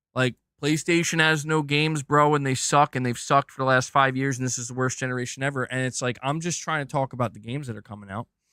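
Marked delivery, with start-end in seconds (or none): none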